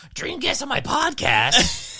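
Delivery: very high, loud, swooping, drawn-out sing-song. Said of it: "[name]'s voice where they're going".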